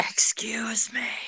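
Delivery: loud, carrying stage whisper. A player's character tries to get the attention of someone shelving books, loud whisper. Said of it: "a loud whisper".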